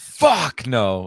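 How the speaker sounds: loud, exasperated exclamation.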